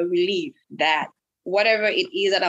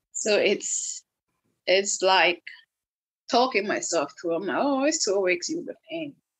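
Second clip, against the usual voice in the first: ordinary delivery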